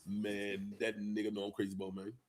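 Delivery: heavy, low, soft, deep bass voice. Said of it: "my boy [name] had that deep ass voice too".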